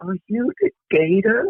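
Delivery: high, slow stage whisper. Retelling a kid asking a question on a plane: imitating a kid half-whispering. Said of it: "whispered it".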